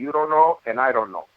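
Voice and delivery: put-on heavy, thickly laid-on Italian accent. Retelling his father's reply to the doctor, in a heavy italian accent. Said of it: "in his heavy Italian accent".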